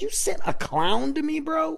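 very high, incredulous yell. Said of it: "I'm yelling at my buddy".

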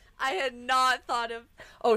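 very loud, high screaming into the mic. Reacting when someone mentions Zaboomafoo: screaming into the microphone. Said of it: "I'm like screaming into my microphone".

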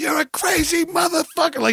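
put-on yell. Recounting a U-turn and what the man with him shouted: retelling someone yelling. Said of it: "He was yelling".

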